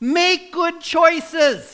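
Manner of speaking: loud, high, stretched-out yelling.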